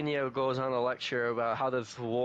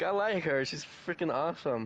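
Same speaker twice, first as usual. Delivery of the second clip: ordinary talk, nothing marked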